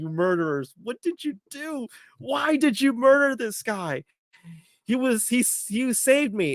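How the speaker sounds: high, tearful voice close to breaking into tears. Retelling a character's reaction in a scene; imitating someone almost crying. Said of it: "He's like literally almost crying".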